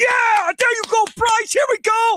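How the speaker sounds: very high, pumped-up, excited cheering yell. Retelling cheering at home for a game-tying hit: retelling own yelling. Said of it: "I was chirping and yelling".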